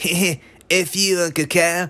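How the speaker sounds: very slow, high, drawn-out babyish cartoon-kid voice. Retelling a scene, the speaker quotes a baby's line: baby Cartman voice. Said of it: "like in a baby Cartman voice".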